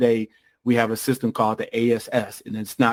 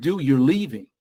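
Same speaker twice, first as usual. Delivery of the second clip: put-on crying voice while speaking; 3 semitones higher than usual. A parent retells what they said to their son in the car; retelling own crying words. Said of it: "I'm in the car crying like a big baby".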